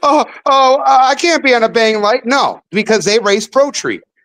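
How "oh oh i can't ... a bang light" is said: high, whiny, blubbering crying voice. Mocking a racer who complains about racing without a Pro Tree: mock crying as John Force. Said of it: "hear John Force over there crying like a little bitch".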